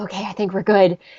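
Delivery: ordinary talk, nothing marked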